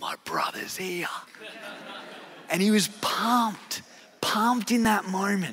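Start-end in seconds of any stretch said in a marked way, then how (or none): 0.0-1.1 soft, hushed, breathy whisper under the breath. Retelling someone walking up while food was served: imitating a whisper. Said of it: "just whispered".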